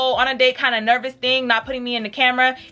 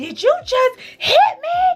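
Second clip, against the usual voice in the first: play-acted very high, ugly screaming cry through tears; 13 semitones higher, 3 dB louder than usual. Retelling being slapped and asking if he hit her: retelling her own screaming and crying. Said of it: "And I'm screaming and crying".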